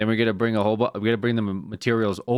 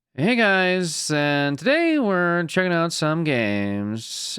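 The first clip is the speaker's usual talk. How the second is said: high sing-song host cadence, games drawn out; 8 semitones higher than usual. Describing two video hosts who copy each other's cadence: imitating a YouTube game-list host's cadence. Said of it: "this tone of".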